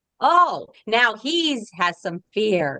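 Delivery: mock, very slow, heavy, swooping sarcasm. Retelling a thought that came up about a fear: imitating a sarcastic remark.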